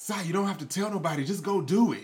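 mock exasperated, fed-up tone, loud and high. Retelling Kai's reply after Sai says he has to pee, imitating Kai's frustration. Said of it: "you could hear the frustration in Kai's voice".

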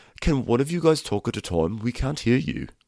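condescending, patronizing, superior, talking-down tone. Retell what someone said to people all talking during a reunion, imitating someone so condescending. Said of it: "so condescendingly is like".

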